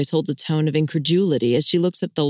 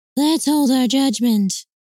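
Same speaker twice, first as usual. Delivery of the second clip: high-pitched falsetto voice; 8 semitones higher than usual. Answering a question about her, he mimics his sister in falsetto. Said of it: "Paul spoke in a falsetto that pretty much pegged his sister's tone and voice".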